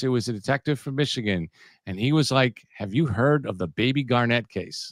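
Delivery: normal talking voice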